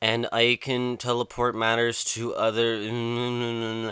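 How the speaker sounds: bored, uninterested, flat droning monotone, drawn out. Retelling a kid's classroom speech, imitating a bored monotone. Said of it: "he's giving this just monotone, boring".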